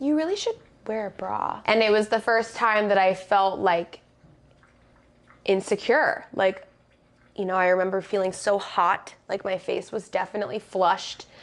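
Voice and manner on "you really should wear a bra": syrupy, sugary sweet, high sing-song voice. Retelling what a mean girl said in line: imitating a sweet-smiling tone. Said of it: "She says to me with, like, this very, like, sweet smile".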